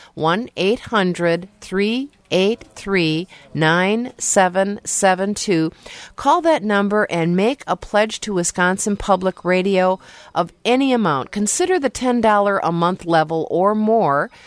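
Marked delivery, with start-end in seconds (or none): 0.2-5.7 slowed down, slow and deliberate. Asking listeners to pledge by phone, the speaker repeats the number, saying it slower. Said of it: "Let me say that a little bit slower".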